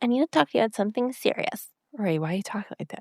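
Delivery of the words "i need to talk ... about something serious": put-on cutesy, childlike little kid's baby voice. Retelling how she asked for a serious talk, imitating her baby voice. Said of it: "It was kind of in her baby voice".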